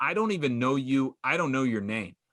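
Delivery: ordinary talk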